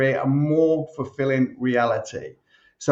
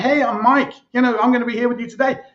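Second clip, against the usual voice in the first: relaxed, casual, chatty tone, pitched up; 10 semitones higher, 4 dB louder than usual. Explaining playback speed, demonstrating how a sped-up intro sounds, conversational delivery. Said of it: "It just becomes more conversational".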